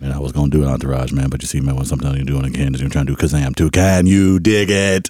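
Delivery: very low, deep voice. Trading impressions with another speaker: Shaq impression. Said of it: "I'm gonna go Shaq".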